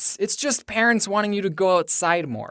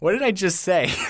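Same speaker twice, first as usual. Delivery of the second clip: usual speaking voice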